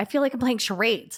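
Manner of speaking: ordinary talk, nothing marked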